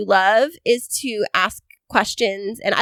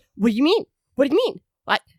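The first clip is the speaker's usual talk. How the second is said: aggressive, pushy, demanding, hard-pressing delivery; 2 semitones higher than usual. Mimicking someone in the studio who questions the speaker, with mock-aggressive questioning. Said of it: "asks questions very aggressively".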